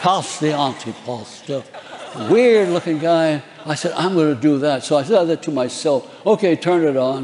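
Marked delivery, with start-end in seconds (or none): 0.0-1.6 put-on English accent. Recalling a line the actor would say, in a Boris Karloff English accent. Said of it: "he had an English accent. He'd say things like".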